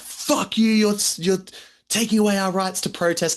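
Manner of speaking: put-on very high-pitched shrieking scream. Retelling a film scene where teenagers protest: imitating screaming protesters. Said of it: "And they're screaming".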